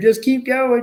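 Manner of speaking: shouting loudly. Retelling the chaos, he recalls yelling at his boy: retelling a yell. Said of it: "so I'm yelling at him".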